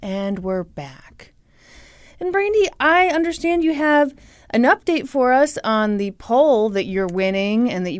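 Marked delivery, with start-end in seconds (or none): 0.0-1.3 hushed, very soft, calm, soothing tone. Showing how the podcast returns from an ad: soothing voice. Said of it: "the soothing sounds of my voice saying".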